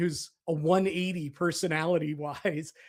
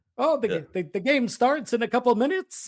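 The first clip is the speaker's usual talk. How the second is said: put-on chatty voice, higher and louder; 6 semitones higher, 5 dB louder than usual. Quoting Marty Biron chatting before a game: bad Marty Biron impression. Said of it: "bad Marty imitations".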